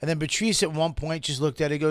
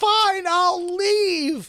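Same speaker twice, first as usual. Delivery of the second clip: very high, on the edge of tears, giving-up tone; 4 dB louder than usual. Retelling how a woman at the table answered: imitating someone in tears. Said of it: "she turned back in tears".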